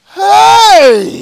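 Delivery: loud shouting, yelling. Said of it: "why are you shouting?".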